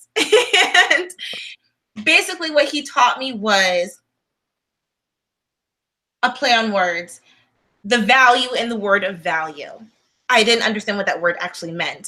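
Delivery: moved, emotional, feeling welling up, close to tears. Recalling a lesson someone taught them, getting emotional. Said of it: "I'm actually getting emotional talking about it".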